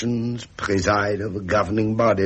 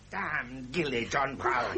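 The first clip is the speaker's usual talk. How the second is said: irritated, angry, slow, deliberately drawn-out speech; 4 semitones higher, 11 dB quieter than usual. Cursing john brown at home, angry. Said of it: "You're angry again".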